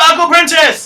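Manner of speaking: loud, high shout. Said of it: "And she yells out".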